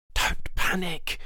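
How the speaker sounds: urgent hiss. Someone else answers a stuck companion; loud hiss. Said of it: "someone else said in a loud hiss".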